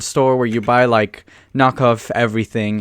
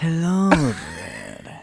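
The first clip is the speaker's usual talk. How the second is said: put-on creepy voice, swooping, stretched vowels; 6 semitones higher, 6 dB quieter than usual. Repeating the voice the other speaker does of him, stretching vowels. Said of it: "elongate the vowels".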